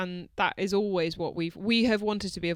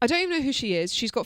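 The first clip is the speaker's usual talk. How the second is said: ordinary delivery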